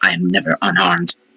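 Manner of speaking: muttered under the breath. Voicing a character dropping off a staff: muttered under the breath. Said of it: "just under my breath, but loud enough".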